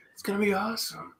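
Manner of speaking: cheerful mock whisper. Imitating Owen Wilson while looking at his picture: Owen Wilson happy whisper voice. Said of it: "got that happy whisper voice".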